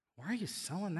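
acted, very quiet, hushed, condescending talking-down tone. Retelling a scripture story, act out a follower complaining: acting out condescension. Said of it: "do you hear the condescension in his voice?".

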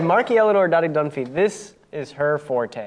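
normal talking voice

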